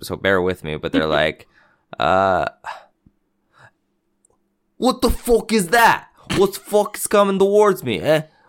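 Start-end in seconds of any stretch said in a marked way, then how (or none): 2.0-8.2 poor fake Boston accent, pitched high. Quoting what people said, the speaker attempts a bad Boston accent. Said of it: "I wish I could do a good Boston accent".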